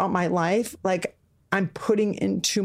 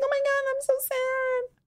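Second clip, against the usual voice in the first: very high, drawn-out, self-pitying whiny cheerleader moan. Imitating how others would see her: imitating a cheerleader feeling sorry for herself. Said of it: "It's like the cheerleader that's like".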